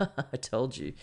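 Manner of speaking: giggly, gloating, laughing through the words. Retelling how mum answered in the car: imitating mum laughing while talking. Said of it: "And she's there laughing like".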